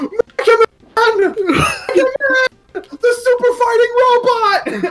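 very high, drawn-out, hyped announcer call. Retelling a Smash trailer announcer's reveal: imitating a hyped announcer. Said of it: "the announcer is so fucking hyped about Mega Man".

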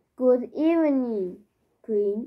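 ordinary talk

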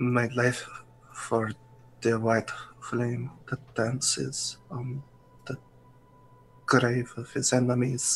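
quiet, dazed muttering. Voicing a dazed character muttering a vow to himself: muttering quietly to himself. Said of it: "you can kind of hear him muttering to himself".

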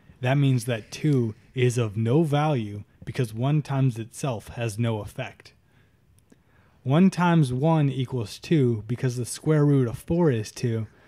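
ordinary talk

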